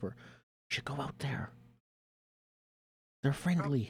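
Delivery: secretive, soft, hushed whisper. Playing a character urging a companion to go out: whispering.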